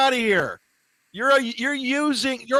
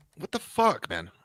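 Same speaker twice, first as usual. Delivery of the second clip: frustrated, exasperated, blurted outburst; 10 semitones lower, 6 dB quieter than usual. Reacting during play, apologizing afterward: frustrated outburst. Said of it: "Sorry, I, I get frustrated easily".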